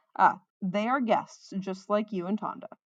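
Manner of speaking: plain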